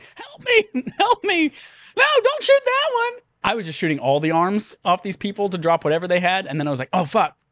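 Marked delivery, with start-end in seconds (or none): 0.1-3.2 play-acted, very high, drawn-out screaming. Describing a woman tied to a stake who screams the whole time: imitating her screams for help. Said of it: "she's screaming".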